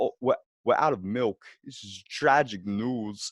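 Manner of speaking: low, slow narrating delivery. Showing how they narrate themselves around the house: Christopher Walken impression. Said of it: "are you narrating yourself like Christopher Walken".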